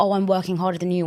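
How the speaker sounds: ordinary talk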